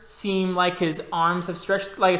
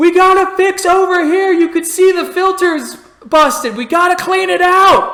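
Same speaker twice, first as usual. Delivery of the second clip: shrill, very loud, high-pitched full-volume yelling; 11 semitones higher, 10 dB louder than usual. Game narrator voicing a crew member on the comm, yelling over the comm. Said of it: "he's yelling".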